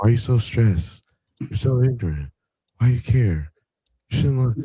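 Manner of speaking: put-on flat, deep voice. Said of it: "like if [name] used his deep voice".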